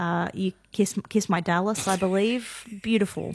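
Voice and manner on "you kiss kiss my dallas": plain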